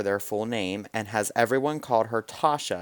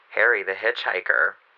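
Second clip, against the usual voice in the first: creepy put-on spooky storyteller voice; 3 semitones lower, 3 dB louder than usual. Reading a story aloud for listeners in a creepy voice. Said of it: "I'm going to do it in the creepy voice for you guys".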